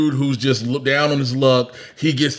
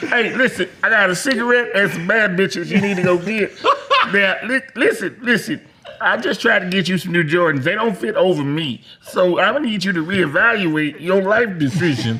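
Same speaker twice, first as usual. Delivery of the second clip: mean villain puppet voice, pitched up; 6 semitones higher than usual. One speaker riffs in a mean villain Kermit voice while the others react.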